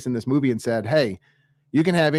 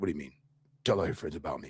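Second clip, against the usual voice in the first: very low, very quiet, gravelly, quick rasp; 10 semitones lower, 12 dB quieter than usual. You show how the actor changed his voice for the role: Michael Keaton's Batman voice, real low and gravelly. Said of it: "it was real low and gravelly".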